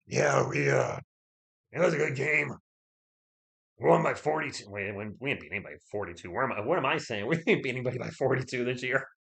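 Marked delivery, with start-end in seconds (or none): 0.1-4.7 rough, creaky voice. Joking with others about how Mitch sounds, Mitch impression. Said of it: "Is that is that Mitch sound like that?".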